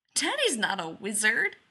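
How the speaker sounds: spoken through a little giggle. Narrator reads the child's reply as they step into the hallway, giggling. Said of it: "Joe giggles".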